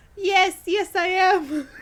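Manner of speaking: put-on belted, drawn-out, unpracticed, Dutch-sounding accent. Voicing a little fish boy getting into a taxi: unpracticed accent, maybe dutch. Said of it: "I didn't practice the accent beforehand".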